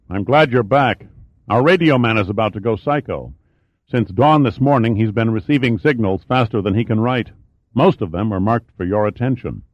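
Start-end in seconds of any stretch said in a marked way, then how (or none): none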